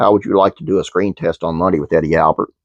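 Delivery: ordinary talk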